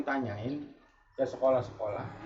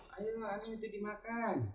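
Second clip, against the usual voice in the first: very soft, hushed, gentle, kindly, pitched-up, acted coaxing; 7 semitones higher, 12 dB quieter than usual. Acting out how some Betawi people invite you to eat: imitating a gentle, kind invitation. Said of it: "Nyuruhnya enak".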